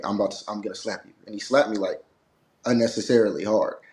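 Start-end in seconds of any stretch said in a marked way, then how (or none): 0.0-1.1 hushed, soft, murmured stage whisper. Retelling what he said before slapping on camera: imitating a half-whisper. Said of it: "he did kinda whisper".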